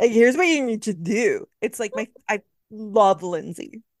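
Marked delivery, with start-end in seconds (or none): 0.1-1.5 put-on slurred voice. Describing a reality TV star's advice, imitating Lindsay Hubbard slurring. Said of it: "when she's slurring you".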